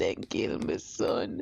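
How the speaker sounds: hushed, slow, weeping, grief-stricken whisper. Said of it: "Please don't cry".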